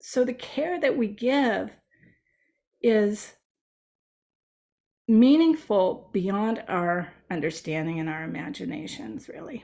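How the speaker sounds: tearful voice, choked with tears. Ending a talk after recalling a chaplain's visit, tearing up. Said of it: "you can see I'm tearing up about it".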